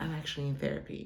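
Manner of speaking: hushed, sheepish, embarrassed whisper. Retelling what they told their supervisor about leaving work early: retelling a whisper. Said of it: "I'm whispering it".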